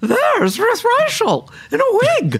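very loud, high, swooping voice carried far. Calling out from across the room in a restaurant, in a very loud, unmistakable Julia voice. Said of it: "said in her unmistakable Julia voice, very loud".

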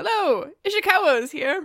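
high-pitched, cheery, bright tone.

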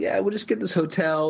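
put-on North Jersey accent. Imitating someone proposing to shoot e-cards in a hotel: shady North Jersey guy impression. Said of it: "a shady impression, it's always somebody from, like, North Jersey".

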